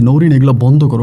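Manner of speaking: normal talking voice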